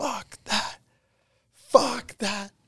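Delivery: all-out, high, drawn-out screaming outburst. Retelling how a teammate skated off after a slap shot: imitating someone screaming. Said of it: "he's screaming".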